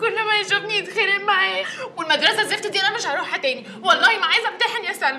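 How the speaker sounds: agitated voice. A girl speaks to Salma, who tells her to calm down: upset. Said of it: "طب اهدي بس اهدي كده".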